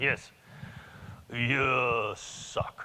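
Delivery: blunt delivery with a long, drawn-out "you". Retelling what a colleague told him, doing Yasu's voice. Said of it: "I'm gonna do Yasu's voice".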